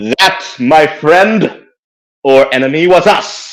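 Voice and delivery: magic-enhanced, amplified proclaiming voice. A character uses magic to address someone's aggression in a magically booming voice. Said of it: "use thaumaturgy to make my voice boom".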